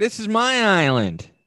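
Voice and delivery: very high-pitched, loud, nasal, belted delivery. Doing an impression of Troyzan after being told to greet him: Troyzan impression. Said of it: "that impression's accurate".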